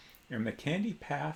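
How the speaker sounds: plain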